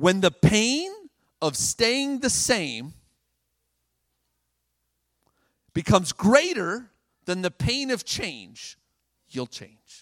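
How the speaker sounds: slow, deliberate. Speaker to an audience, repeating a point so all can learn it, saying it slower. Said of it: "I'm going to say it slower".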